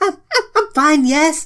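high-pitched, nervous, stuttering delivery. Recapping a chapter, she answers why her face was red, stuttering Mimosa impression. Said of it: "she replies with a stuttering".

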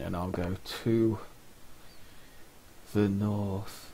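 put-on listless, sluggish, soft, slow lethargic drawl. Speaker acts out the game character's answer, imitating Strelok's lethargic voice. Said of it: "In that really lethargic voice of his".

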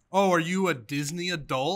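acted, slow, patronizing, talking-down, condescending tone. Recounting people asking about their Mickey Mouse ears photo, mock-condescending question. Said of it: "Like condescendingly".

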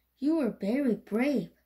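ordinary delivery

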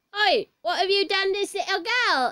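put-on Cockney accent. Voicing Mr. Enfield as he turns up in the scene, in a Cockney accent.

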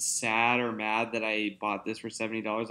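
plain

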